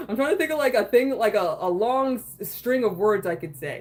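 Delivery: ordinary delivery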